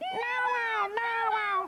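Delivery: high-pitched puppet voice.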